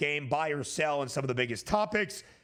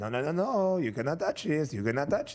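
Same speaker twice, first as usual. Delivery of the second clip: put-on comedic Eastern European accent. Taunting Cowboys fans over a replica trophy, the speaker does a Borat impression. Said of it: "That was a pretty good Borat".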